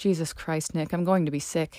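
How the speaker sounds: ordinary delivery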